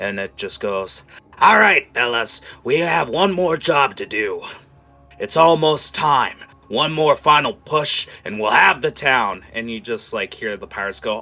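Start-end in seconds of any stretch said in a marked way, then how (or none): 1.4-9.4 very loud, booming voice. Telling a story, a pirate captain addresses his crew, loud booming voice. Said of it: "you just hear his loud booming voice".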